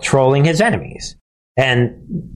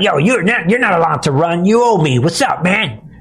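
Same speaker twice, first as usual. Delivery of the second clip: intimidating cartel-boss style gangster talk; 4 semitones higher than usual. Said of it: "the cartels talk that way".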